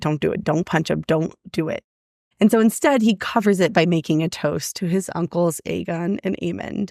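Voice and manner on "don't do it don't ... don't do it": put-on restrained fury, held-back anger, lower pitch. Retelling a character fighting the urge to punch someone: imitating someone holding back anger. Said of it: "really trying to hold it together".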